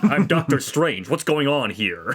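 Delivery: put-on plain, bland, generic general American accent. Mocking an actor's version of the character, the speaker does Doctor Strange in plain American accent. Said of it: "he just has like an American accent".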